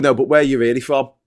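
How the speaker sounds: ordinary delivery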